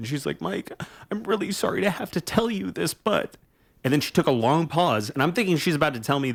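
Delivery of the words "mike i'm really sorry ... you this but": mock crying, tearful, pitched-up voice. Retelling a nine pm phone call from mom: imitating crying mother. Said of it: "she's crying".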